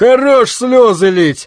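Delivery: barked snap. Narrator reads a man in the corner at the sobbing girl: barking. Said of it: "рявкнула".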